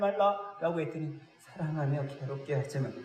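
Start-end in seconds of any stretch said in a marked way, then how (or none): 1.4-2.9 shrunken, meek, small hushed voice. Preaching on wives and husbands, reading the verse for husbands: small, quiet voice. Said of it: "짜다죠".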